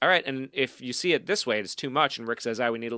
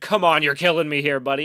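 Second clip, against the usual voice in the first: loud, furious screaming outburst; 4 semitones higher, 7 dB louder than usual. Retelling a guy coming out screaming at him, imitating a man screaming. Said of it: "he's like screaming at me".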